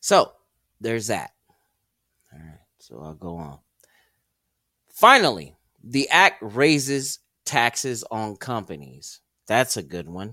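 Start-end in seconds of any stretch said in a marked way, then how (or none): 9.5-10.3 heavily sarcastic, much lower. Commenting on a provision of the act being discussed, with heavy sarcasm. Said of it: "I mean that with all the sarcasm I can think of".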